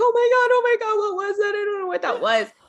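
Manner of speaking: very high, frantic, rushed, tearful panicked crying. Retelling a friend on the phone after the strange voice: imitating someone freaking out crying. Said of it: "starting to freak out, crying".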